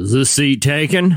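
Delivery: heavy, big, deep low baritone register. Retelling a stranger behind him at brunch, in a big baritone voice. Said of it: "this big baritone voice behind me go like this".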